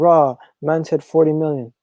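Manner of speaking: ordinary talk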